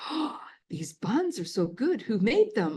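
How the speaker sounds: put-on sing-song German accent. Retelling her mom's praise of the food at the table, in a cute german accent. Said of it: "but in a cute German accent".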